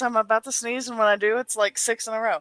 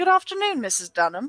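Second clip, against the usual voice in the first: put-on convincing, genuinely good English accent; 3 semitones higher than usual. Starting a scene by greeting missus dunham: good english accent. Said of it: "that is a genuinely good English accent".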